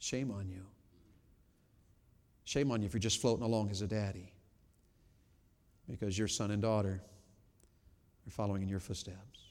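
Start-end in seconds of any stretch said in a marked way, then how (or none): 0.0-4.3 soft, gentle, tender voice. Speaker addressing fathers who are just floating along: gentle. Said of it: "I say it real gently".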